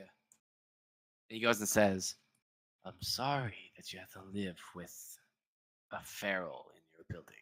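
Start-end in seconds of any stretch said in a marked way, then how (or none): 2.8-7.3 quick, very hushed whisper, barely voiced. A storyteller voices a man who leans in to the listener: whispering. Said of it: "he kind of leans in and whispers to you".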